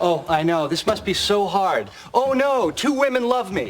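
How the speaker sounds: put-on sarcastic, mock sympathetic tone. Retelling a man's reply to someone complaining about choosing between two women; retelling a sarcastic remark. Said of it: "and that's sarcasm for".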